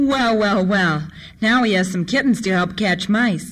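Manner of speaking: ordinary delivery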